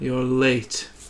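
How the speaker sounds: utterly dull, flat, level delivery. A game narrator voices a witch hunter addressing a late arrival, very dull tone. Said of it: "He just speaks in a very dull tone".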